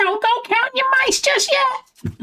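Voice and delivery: goofy, silly put-on voice, very high. Recalling a sound from a trailer before playing the clip; silly voice. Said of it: "I just do a silly voice".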